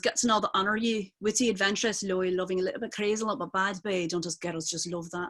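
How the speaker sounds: put-on Scottish accent. Speaker practising accents quotes a line from Trainspotting, Scottish accent from Trainspotting. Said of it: "from Train Spotting when she goes".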